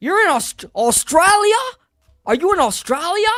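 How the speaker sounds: very high, clumsy, bad put-on Australian accent. Answering someone in Australia about a VPN, in a bad Australian accent. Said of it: "my Australian accent is bad".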